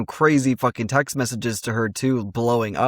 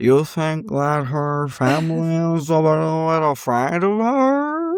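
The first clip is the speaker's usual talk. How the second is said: put-on high-pitched, very slow, stretched-out slurred speech; 5 semitones higher than usual. Retelling how Meredith consoles someone on a couch, words slurred together.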